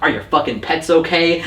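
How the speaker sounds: ordinary delivery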